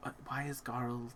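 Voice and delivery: very quiet, slow, faint half-whisper. Voicing a character asking about garl: half-whispering very quietly. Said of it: "she whispers this very quietly".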